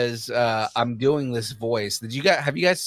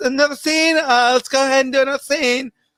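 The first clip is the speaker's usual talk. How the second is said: put-on joking voice, higher and louder; 14 semitones higher, 7 dB louder than usual. Retelling how an actor walks around set between takes: imitating Pedro Pascal's on-set voice. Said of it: ""In between every".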